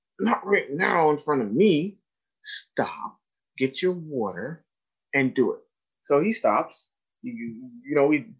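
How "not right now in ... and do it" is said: ordinary delivery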